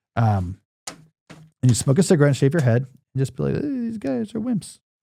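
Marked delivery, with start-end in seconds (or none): 3.6-4.8 very high, rough, soft and raspy sneering tough-guy voice. Joking about an essay on Debord, the speaker does an impression of the postmodernist. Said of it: "That's my impression of the postmodernist".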